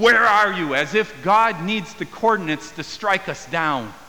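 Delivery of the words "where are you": angry, raised, demanding tone. Showing how listeners hear God's question to Adam and Eve, angry tone. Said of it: "we hear it with this angry tone".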